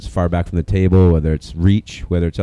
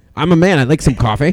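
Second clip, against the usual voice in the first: French man's voice; 9 semitones higher, 3 dB louder than usual. Speaker retelling how a man named Gene answered: Gene's high-pitched Frenchman voice. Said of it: "it was in a high-pitched sort".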